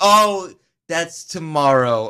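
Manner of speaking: loud, slow delivery with audible dawning realization.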